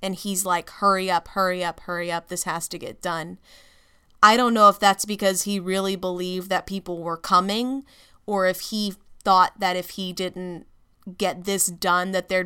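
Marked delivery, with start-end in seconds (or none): none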